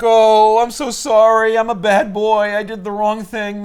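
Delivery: mock, high, slow, drawn-out blubbering sobbing wail. Retelling a comic scene where a character apologizes: imitating a character crying. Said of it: "Dawkins starts crying and being like".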